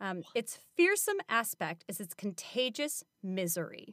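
normal talking voice

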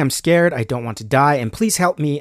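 ordinary talk, nothing marked

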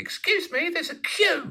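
loud, very high, squeaky voice. Retelling telling off a man who cut the queue, retelling a loud squeak. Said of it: "I loudly squeak".

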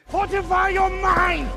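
over-the-top, very high, exaggerated anime character voice. Explaining a dislike of anime, mimicking how anime characters sound. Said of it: "That's what they fucking sound like".

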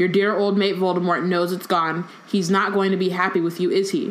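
ordinary delivery

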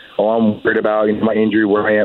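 ordinary talk, nothing marked

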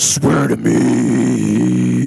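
put-on screamo-style superhero voice. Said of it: "a weird fucking, like, screamo voice".

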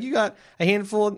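high, fast, rattled-off voice. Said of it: "she's like".

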